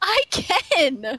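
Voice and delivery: words breaking into laughter. Insisting to the other speaker it can be said straight-faced, laughing while talking. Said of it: "You're already laughing".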